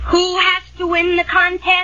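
ordinary delivery

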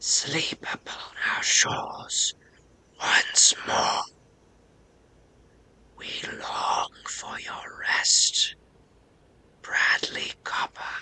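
haunting, eerie, breathy whisper. Storyteller voicing a voice from the island calling to the listener, eerie whispering voice. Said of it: "eerie, similar voice whispers forwards and backwards".

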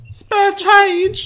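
put-on very high-pitched woman voice. Imitating the woman who stands outside the CVS, high-pitched imitated voice. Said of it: "it's just such a high-pitched voice".

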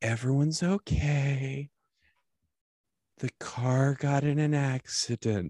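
slow, very tender, sweet voice. Imitating a wife breaking news of a car accident: imitating wife's super tender, sweet voice. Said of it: "she has this voice that's super tender and sweet".

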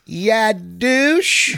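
put-on Southern drawl. Retelling what a woman said to their tour group, in a Southern accent. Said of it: "Southern accent".

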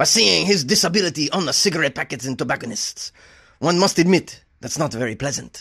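bad, fake French accent, very poor. Speaker reads out a lawyer's words about his client in the worst French accent ever. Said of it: "This is the worst French accent ever".

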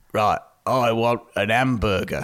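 very low voice sinking into London vowels. Acting out a film actor attempting an accent: Michael Caine impression. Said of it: "that's just Michael Caine".

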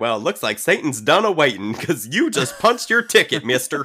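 very loud, high, scolding Southern grandma voice. Speaker imagines a grandma seeing a freshly pierced ear, Southern grandma impression. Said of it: "my amazing grandma impression".

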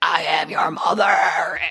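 huge, big monster creature voice. Retelling a movie scene, the levitating mother answers the boy in a big Babadook voice. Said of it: "in big Babadook voice".

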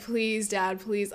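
mock crying, tearful voice. Recalling being a kid whose dad wanted to show a film, imitating crying and begging. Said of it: "And I'd be like crying".

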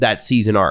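ordinary talk, nothing marked

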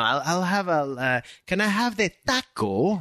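exaggerated, overdone Spanish accent, slow and swooping. Mocking non-spanish speakers ordering food: imitating overdone spanish pronunciation. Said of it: "pronounce something in Spanish, like how it's supposed".

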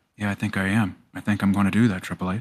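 soft-spoken gentle voice. Imitating Batista answering Triple H: soft-spoken Batista impression. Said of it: "He just sounds so soft-spoken".

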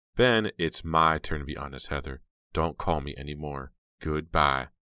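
ordinary talk

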